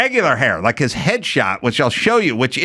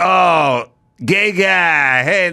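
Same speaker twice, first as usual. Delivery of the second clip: very slow, drawn-out, dumb movie tough-guy voice. Retelling how thugs on a stoop taunted someone: imitating stupid movie thugs. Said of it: "stupid movie thugs".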